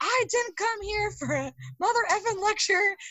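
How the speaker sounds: mock very high, drawn-out screeching scream. Retelling how he started yelling when refused: imitating someone screaming. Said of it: "screaming at me 'cause I won't give him these matches".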